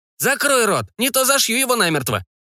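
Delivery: put-on very high, barking old crone voice. Reading a story, an unseen old woman in the dark barks at the screaming narrator: barking old woman's voice. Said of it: "гаркнула неизвестная старуха".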